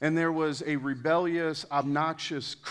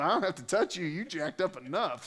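a touch of put-on rural country accent; 3 dB quieter than usual. Speaker voicing the devil sitting on the sideline, in a country accent. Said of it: "the devil almost had a country accent".

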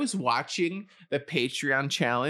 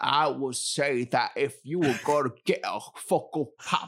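badly done detective voice. Reasoning out a Funko guessing game, bad Benoit Blanc impression. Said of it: "Use your Benoit Blanc logic here".

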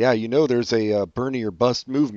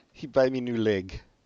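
put-on Eastern European accent, quieter; 2 semitones higher, 4 dB quieter than usual. Joining in imitating Trump's wife: put-on Eastern European accent. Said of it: "she's so Eastern European".

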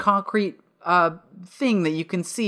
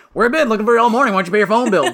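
one long, loud, rushed run-together yell; 4 semitones higher, 7 dB louder than usual. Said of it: "yells up".

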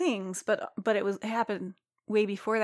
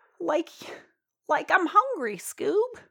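put-on cartoon stoner voice, much higher pitch; 8 semitones higher, 4 dB louder than usual. Describing a stoner cartoon dude, the speaker does a Shaggy voice. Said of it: "a regular Casey Kasem here in the studio".

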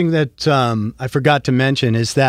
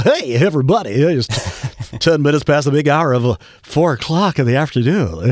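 radio dj voice, faster. In an interview, the speaker demonstrates the radio voice they can do. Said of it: "in terms of the radio voice".

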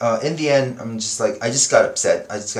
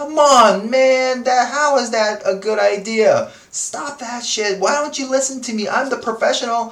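mock fed-up, exasperated, very high outburst; 13 semitones higher, 4 dB louder than usual. Recalling his past reactions to a client's suggestions, mock exasperation. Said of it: "I used to get very exasperated".

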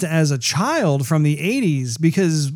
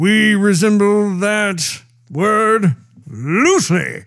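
very slow, belted funny voice, dragging every word; 4 semitones higher than usual. Retelling a quip belted out at a fan meeting: belted out like Peter Cullen. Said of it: "he actually belted this out".

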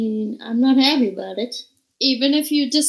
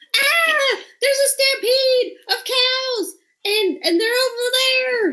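very high, high-pitched hollering shout; 13 semitones higher than usual. In a game, a player's character runs down and warns the orcs: hollering.

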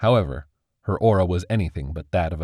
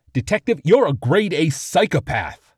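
bellowing, high-pitched roaring outburst; 10 semitones higher, 4 dB louder than usual. Narrator reads Chief Meriden addressing the detective, roaring. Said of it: "Chief Meriden roared".

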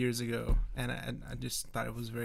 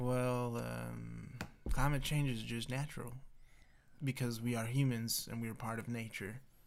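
slow, soft, turtle-paced, drawn-out voice; 5 dB quieter than usual. Told to do the bit slower, perform it in a slow Mitch McConnell voice, like a turtle. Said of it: "Do a slow, like a turtle".

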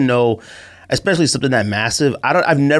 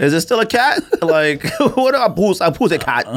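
put-on Jamaican accent, higher pitch; 6 semitones higher than usual. Chatting about london slang and what a word means, in a put-on jamaican accent. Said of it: "why are you doing Jamaican accent?".

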